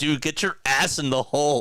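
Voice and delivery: mild yell. Retelling being yelled at while trying to get on: imitating someone yelling. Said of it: "He yelled again".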